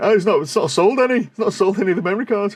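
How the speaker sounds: put-on high gloating taunt through laughter. Retelling what a man said to the speaker, doing his voice: imitating him laughing. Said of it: "But he was laughing now".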